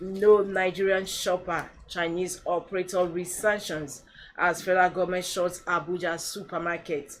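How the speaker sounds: usual speaking voice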